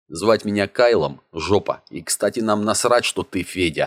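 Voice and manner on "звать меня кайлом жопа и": ordinary delivery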